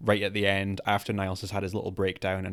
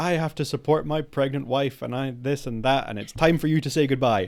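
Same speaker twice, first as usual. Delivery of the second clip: mock ranting shout, high-pitched and loud; 6 semitones higher, 5 dB louder than usual. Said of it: "just starts shouting about".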